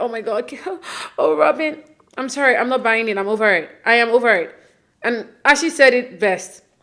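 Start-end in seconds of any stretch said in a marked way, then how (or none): 0.0-1.8 put-on, high-pitched, weepy blubbering sob-talk. Mocking someone's tearful reaction to robin: mock crying. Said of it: "while you're crying at".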